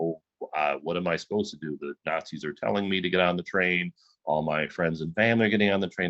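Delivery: plain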